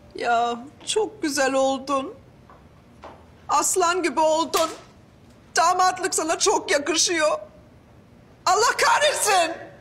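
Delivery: tearful, weeping, crying through the words. In a drama, complimenting a man in his groom's suit: crying. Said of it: "Tamam artık ağlama yeter".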